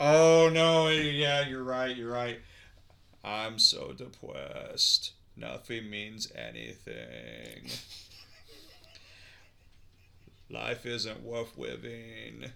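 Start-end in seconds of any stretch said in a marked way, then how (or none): 3.2-12.5 put-on depressed robot cartoon voice. Imagining a robot speaking as Elmer, doing Elmer voice, robot-like and mock-depressed. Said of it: "it's Elmer's voice".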